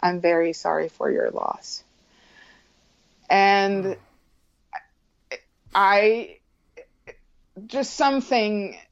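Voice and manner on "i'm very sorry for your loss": put-on quick, grave, solemn, somber tone. Recalling a solemn boy who came up and spoke to them: imitating a somber tone. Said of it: "in a somber tone".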